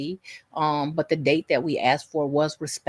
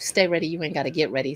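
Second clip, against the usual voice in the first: plain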